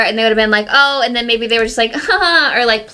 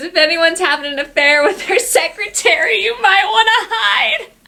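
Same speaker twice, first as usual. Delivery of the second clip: mock giggly talk, higher pitch; 9 semitones higher than usual. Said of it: "And he's giggling like".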